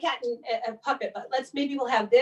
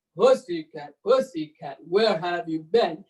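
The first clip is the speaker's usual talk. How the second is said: very low, deep voice; 8 semitones lower than usual. Reading a nursery rhyme aloud, voicing the person asking the cat: low voice for the asker. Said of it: "Maybe that person should have a low voice".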